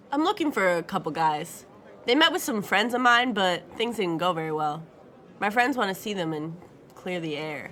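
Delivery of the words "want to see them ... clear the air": ordinary delivery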